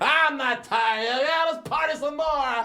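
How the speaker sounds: put-on very high, loud, shrill drunken hollering. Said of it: "screaming shit out".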